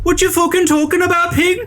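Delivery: put-on very high-pitched Scouse accent. Describing a game character, the speaker quotes him in Kuno's Scouse accent. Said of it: "Kuno kind of has this Scouse accent".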